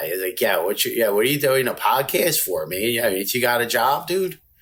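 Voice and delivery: put-on Philadelphia accent. Asked to give a couple of lines, the speaker shows the Philly accent. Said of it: "it's like when you talk like that".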